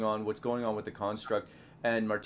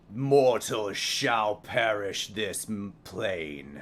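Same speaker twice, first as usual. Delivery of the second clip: deep, low, rasping, gravelly statue voice, drawn out; 5 dB louder than usual. Voicing a statue that looks down at the attacker: low gravelly statue voice. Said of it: "just this low, gravelly".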